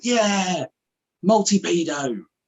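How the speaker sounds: mock triumphant, high, proud shouting. Retelling his son firing rockets in a game: imitating Oscar shouting. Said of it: "And you just shout".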